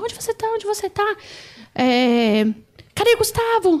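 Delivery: hard, high, drawn-out shouting. Retelling a phone call from her mother: imitating her mother shouting. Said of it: "minha mãe gritando muito".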